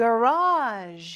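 garage said with marked, stressed pitch contour. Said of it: "높낮이 잘 기억해 주셔야 돼요".

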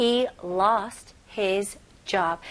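very slow, careful reading.

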